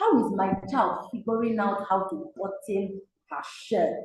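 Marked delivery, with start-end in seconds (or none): none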